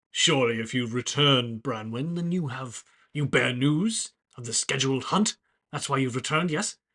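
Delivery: loud, booming, big resounding voice. A muscular centaur approaches and questions a returning companion, booming voice. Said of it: "a familiar booming voice accosts you".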